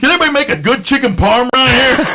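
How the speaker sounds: shrill yell, pitched way up high. Recounting the speaker's dad shouting at the speaker's mom: retelling dad's yell. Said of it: "He just yelled at my mom".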